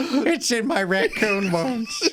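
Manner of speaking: voice pushed way up high, cartoonish. Repeating a funny line in a Peter Griffin voice. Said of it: "It's such a good Peter Griffin".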